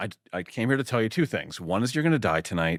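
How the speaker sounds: mock deadpan, offhand, matter-of-fact delivery. Describing the limo scene, the speaker acts out the scary guy's threat, matter-of-fact. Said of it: "And it's so matter of fact".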